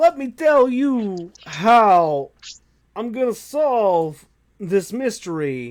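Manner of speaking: very slow, drawn out. Retelling how a character talked in the show: budget Christopher Walken voice. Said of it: "and that's how he would talk".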